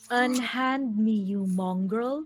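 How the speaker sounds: icy, cold, menacing voice. A player's character turns to another character, icy, cold threat. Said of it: "I turn to him as icily as I can".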